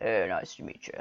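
really low, soft, breathy voice. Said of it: "he had a really low voice and he would say".

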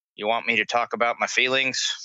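put-on deadpan delivery. Imagining Jerry Sloan answering a reporter, imitating his deadpan. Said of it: "looking deadpan in a reporter going".

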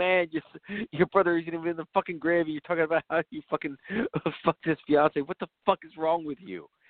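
frantic, appalled, freaked-out, stammering rant. Retelling a movie scene where a character reacts to a confession: imitating someone freaking out. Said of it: "he starts freaking out".

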